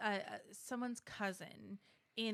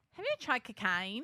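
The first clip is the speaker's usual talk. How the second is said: loud, put-on Australian accent; 3 semitones higher, 8 dB louder than usual. Showing the one accent that can be done: Australian accent. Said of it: "I can do Australian and the phrase is".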